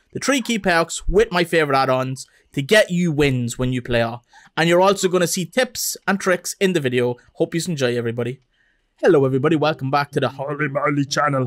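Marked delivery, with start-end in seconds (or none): 9.0-11.5 silly, goofy put-on voice, much lower. Greeting viewers at the start of a channel video: silly voice. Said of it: "Why did I say it in a silly voice?".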